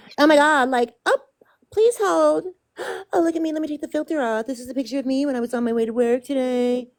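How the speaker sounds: grating, maddening, showy, high-pitched, irritating voice. Complaining about a woman whose voice drives them batty, mocking her grating voice. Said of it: "her fucking voice drives me batty".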